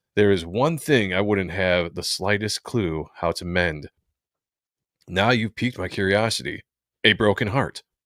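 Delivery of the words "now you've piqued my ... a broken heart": ordinary talk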